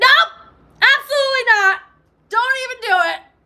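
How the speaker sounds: guarded, defensive tone, pitched very high. Acting out a listener's imagined reply to a sincere admirer: imitating a defensive refusal.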